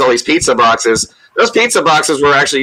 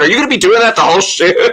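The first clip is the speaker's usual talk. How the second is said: laughing, pitched-up, cracking up mid-line; 6 semitones higher than usual. Retelling how a castmate reacted to an accent on the first take: imitating Thomas laughing while talking. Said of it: "Thomas just cracks up, going".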